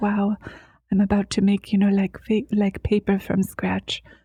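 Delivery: gentle, intimate, soft, soothing near-microphone murmur. Describing a video maker's style, the speaker imitates her soothing close-mic voice. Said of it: "she has like a soothing voice. Like she gets really close to the microphone".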